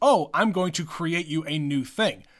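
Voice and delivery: ordinary talk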